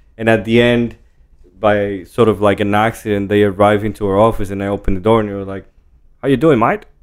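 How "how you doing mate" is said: put-on Australian accent. Retelling how visitors greeted at the office door: imitating an Australian accent. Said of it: "the Australian".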